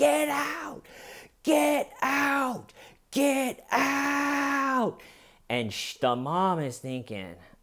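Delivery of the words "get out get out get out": put-on explosive scream, very high and very slow. Retelling how a son suddenly exploded at his mother: imitating someone screaming. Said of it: "He just explodes and starts screaming".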